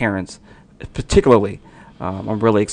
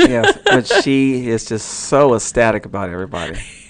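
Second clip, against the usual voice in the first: sarcastic, mock-enthusiastic, swooping sing-song tone; 2 semitones higher, 4 dB louder than usual. Replying to the other speaker about leading the show alone: sarcastic. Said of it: "That's sarcasm that you hear".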